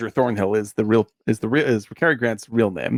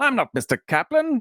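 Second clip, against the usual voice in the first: put-on full Mid-Atlantic accent, laid on thick, pitched high; 13 semitones higher than usual. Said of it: "the full-on Cary Grant voice".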